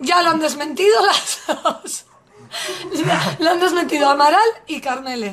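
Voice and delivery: laughing while speaking.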